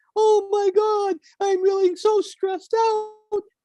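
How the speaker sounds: very high, drawn-out cartoon voice. Demonstrating a trick for creating distance from distress, Mickey Mouse voice. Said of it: "a high pitched Mickey Mouse voice".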